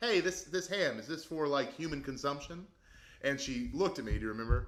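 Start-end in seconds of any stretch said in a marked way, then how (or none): 0.0-2.7 mock playful, jokey tone, pitched up. Retelling a question put to the woman in a country store: retelling own jokey question. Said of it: "I was trying to be jokey".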